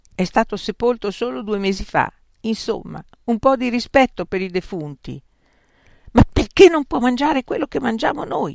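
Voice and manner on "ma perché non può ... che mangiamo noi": indignant, venomous, furious, fast, raised voice. A woman questioning the others about their guest, furious. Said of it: "domandò Erro inviperita".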